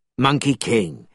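ordinary delivery, nothing marked

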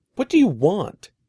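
forceful, insistent tone. The narrator confronts the big man chasing him and Eddie, demanding. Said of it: "I demanded".

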